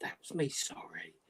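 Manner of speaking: quiet whisper. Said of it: "They whisper on a".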